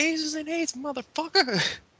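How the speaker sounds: shrill, very high-pitched shout. Retelling what one of the crew shouted: imitating someone yelling. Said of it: "one of them yells".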